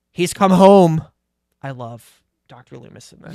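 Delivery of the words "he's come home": solemn, grave voice at full volume. Recapping the movie, quoting the doctor's line: solemn Doctor Loomis impression. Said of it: "Loomis solemn-, solemnly declares".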